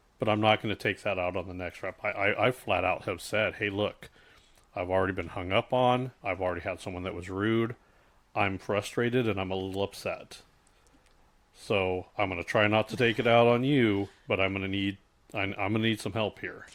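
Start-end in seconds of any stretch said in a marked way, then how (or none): none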